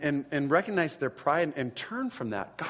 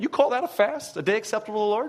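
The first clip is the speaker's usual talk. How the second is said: heavy, scornful sarcasm, pitched up; 7 semitones higher, 4 dB louder than usual. Reading scripture aloud as God's words: imitating God being sarcastic. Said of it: "This is sarcastic God coming out".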